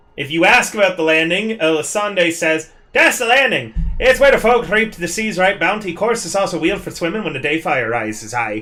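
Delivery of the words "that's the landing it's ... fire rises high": put-on slipped into natural Newfoundland accent. Voicing Elisande describing the landing: slipped into Newfoundland accent. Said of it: "I actually slipped into my real accent there".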